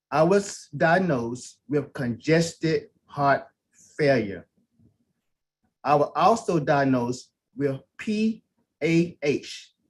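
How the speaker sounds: very slow and low, deliberately drawn out word by word. Giving a health testimony to listeners, talking real slow. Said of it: "I'm going to talk real slow".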